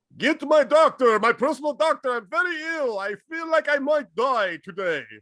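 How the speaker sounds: very high-pitched, badly done Russian accent. Joking about a dying Stalin calling for a doctor: bad Stalin impression. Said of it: "He doesn't even sound Russian at this point".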